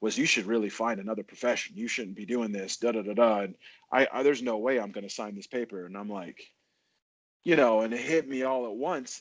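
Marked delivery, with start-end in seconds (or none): 0.2-5.9 put-on brash, pushy, put-down delivery. Retelling a refusal to sign a fight clearance paper: imitating a brash delivery. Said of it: "his kind of brash delivery".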